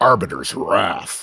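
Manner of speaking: deep, epic announcer voice with gravitas. Showing the other speaker how to say the ship name: Halo voice. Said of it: "But it's like this".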